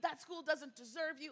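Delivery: furious, angry, worked-up ranting. Retelling mom's rant in the car: imitating mom ranting angrily. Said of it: "she went on a rant".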